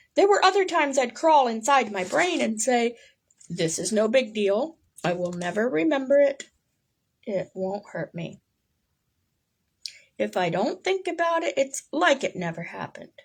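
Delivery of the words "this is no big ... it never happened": ordinary talk, nothing marked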